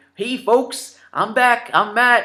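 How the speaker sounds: put-on slight Canadian accent, high and slow. Imitating a friend's video greeting: matt's hint of canadian accent. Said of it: "he has that hint of a Ca-, Canadian accent".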